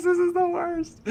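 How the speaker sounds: acted tearful voice. Retelling reading a comic as a teenager: imitating own past crying. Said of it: "I'm just, like, crying".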